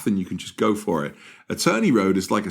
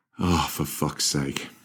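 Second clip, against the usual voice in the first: muttering under the breath, quieter, lower, slower; 4 semitones lower, 4 dB quieter than usual. Retelling what he muttered while getting up off the couch, imitating a mutter under breath. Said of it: "muttered under his breath".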